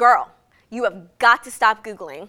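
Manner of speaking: imitated blunt tone. Retelling what the doctor told her: imitating a blunt doctor. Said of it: "she said very bluntly".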